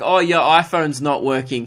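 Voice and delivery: ordinary talk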